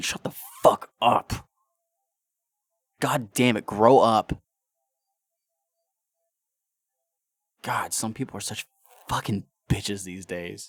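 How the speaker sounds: loud, furious rant with swooping pitch. Ranting about people online, getting angry: angry ranting. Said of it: "I'm getting angry right now thinking about it".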